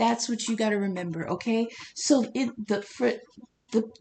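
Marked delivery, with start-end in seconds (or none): 2.0-3.8 stuttering, stammering over words, much slower. A speaker addressing listeners loses their words mid-explanation, stuttering. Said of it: "I'm sorry, I'm stuttering".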